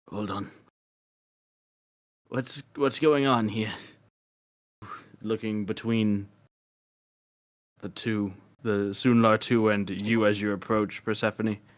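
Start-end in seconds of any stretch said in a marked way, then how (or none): 0.1-3.7 hoarse, rasping, raspy voice. Voicing a character who steps back as others approach: raspy voice. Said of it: "in a raspy voice".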